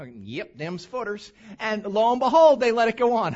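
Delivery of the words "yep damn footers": put-on soft, low-key North Carolina mountain accent. Retelling what a county official with a clipboard said, mountain accent. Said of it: "don't mind if I do the mountain accent".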